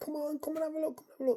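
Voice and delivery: high, loud shouting. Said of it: "So I keep on shouting over".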